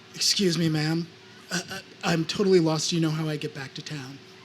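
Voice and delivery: as meek as can be, hesitant. Retelling asking a stranger for directions when lost: imitating own meek voice. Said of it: "trying to make myself as meek as possible".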